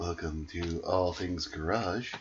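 calm, very soft, slow radio host voice. Doing the podcast intro the way an NPR show would, in NPR radio host voice. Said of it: "Like for some kind of like an NPR show".

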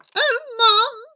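very high, frightened gasp. Narrator reading a frightened character's words to his mum after climbing down, gasped. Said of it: "he gasped".

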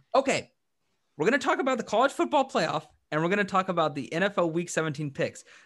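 cracking voice, breaking in places. Speaker introduces the topics on a third take, voice cracking. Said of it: "The reason my voice is cracking there".

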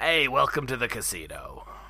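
creature voice of a flying, winged alien. Saying who he was picturing for a casino dealer, the speaker does a Watto voice. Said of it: "whenever he does that voice".

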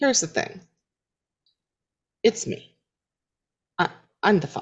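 hushed, soft voice. Sitting down, looking at the ground to clue someone in; quiet voice. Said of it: "kind of in a quiet voice".

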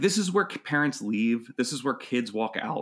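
ordinary delivery

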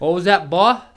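put-on Southern accent. Playing a police officer confronting someone: southern accent cop voice. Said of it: "is the Southern accent standard issue with the police".

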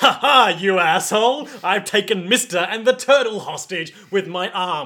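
loud, slow, gloating, taunting tone. Voicing Chocolata taking hostages in the game: voicing Chocolata gloating. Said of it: "and Chocolata's like".

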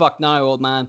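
plain

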